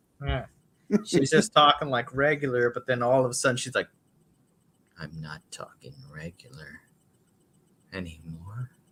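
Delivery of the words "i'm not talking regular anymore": very low, hushed, slow demonic possessed voice. Retelling how a woman suddenly stopped talking regular, imitating a low possessed voice. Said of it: "Yes, just like that".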